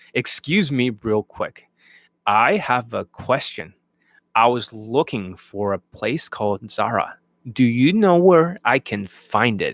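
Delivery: slow, drawn-out, lulling, hypnotic delivery. Showing an improved opening line: slow, hypnotic delivery. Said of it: "It's a slight change, but it's much more hypnotic".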